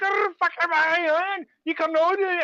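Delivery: angry, high-pitched ranting in put-on Scottish accent. Speaker retells a woman's rant they watched, imitating her Scottish accent. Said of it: "she's got like a Scottish accent".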